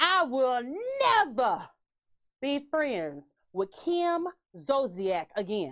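slow put-on voice, every word drawn out. Retelling a comeback after a big fight: NeNe voice impression. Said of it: "I'm gonna try to do her voice".

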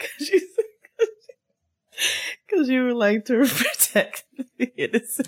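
talking through laughter, very high-pitched. Answering why they are laughing: laughing while talking. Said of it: "why are you laughing?".

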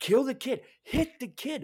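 shrill, very high-pitched yelling. Recounting what he kept yelling during a scene with a mom and kids; retelling his own yelling. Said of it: "because I was yelling it".

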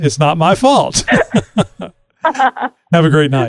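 slow, laughing through the words.

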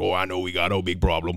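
put-on spoken in a Cajun accent. Retelling what a fired coach told his AD: Ed Orgeron Cajun accent. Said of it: "with that beautiful Cajun accent that he has".

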